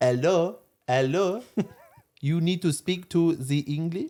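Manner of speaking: slow, comedic, put-on French accent. Showing how actors fake an accent instead of speaking French: put-on French accent. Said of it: "Why do I do the French accent".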